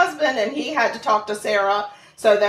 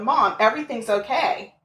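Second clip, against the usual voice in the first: put-on voice, laughing while talking. Retelling a daughter's phone call saying everything is fine: imitating Sarah laughing. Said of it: "I get a call from Sarah laughing, going".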